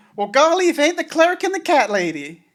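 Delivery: hammy, very high, swooping corny sitcom-style voice. Voicing a guard greeting the cleric and the cat lady: bad sitcom character voice. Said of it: "Sounds like a bad sitcom".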